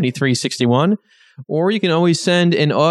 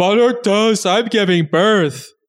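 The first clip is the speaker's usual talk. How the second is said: high, slow cartoon character voice; 5 semitones higher than usual. Imagining a cartoon character giving birth to jawbreakers: Ed voice. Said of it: "that was the voice, that was how he talked".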